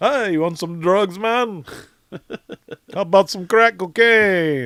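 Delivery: very high, failed put-on Jamaican accent. Telling a ghost story about a jamaican family that lived there, doing a bad jamaican accent. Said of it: "I can't do a Jamaican".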